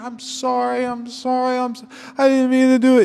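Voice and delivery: put-on very high, sloppy, slurred drunken pleading tone. Retelling a drunk driver's apology as cops pull him out, imitating drunk slurring. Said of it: "You can hear him slurring".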